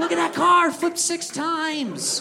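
high, slow, awed gawking voice.

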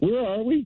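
acted-out tearful, bewildered, crying voice. Retelling a bad trip under a parking garage: imitating own past crying. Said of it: "and I start crying".

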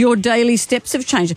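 ordinary delivery

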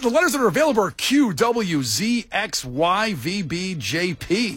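announcer-style voiceover voice, list-like cadence. Playing a word game, reading out the available letters in a voiceover voice. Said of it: "you went into your voiceover voice when you read those".

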